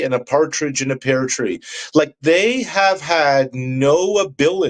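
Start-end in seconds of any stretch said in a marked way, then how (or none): none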